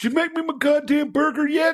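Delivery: put-on young man's voice, very high-pitched, shrill yell. Retelling a young guy yelling from another room: imitating a young guy yelling. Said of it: "I hear this young guy yell".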